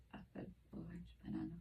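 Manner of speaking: barely audible, very quiet whispered words. Whispering three words into one ear for a hearing test: whispering. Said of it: "I'm going to whisper for this ear".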